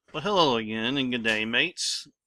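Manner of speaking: fake, put-on Australian accent. Host opening a tech show episode, in a put-on Australian accent. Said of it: "I was working on my Australian voice there a little bit".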